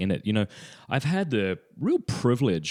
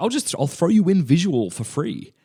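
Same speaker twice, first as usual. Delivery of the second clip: bad put-on Irish accent, higher and louder; 7 semitones higher, 5 dB louder than usual. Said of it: "I can't do the accent, I'm sorry".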